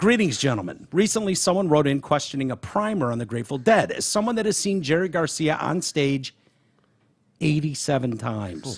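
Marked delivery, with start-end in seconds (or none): none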